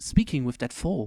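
ordinary delivery

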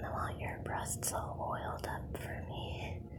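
soft, quiet, hushed whisper.

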